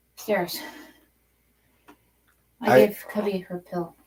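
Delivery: out of breath. Answering a request to sit down after climbing stairs, out of breath. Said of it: "Out of breath".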